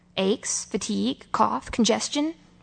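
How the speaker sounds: plain reading voice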